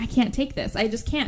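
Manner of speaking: usual speaking voice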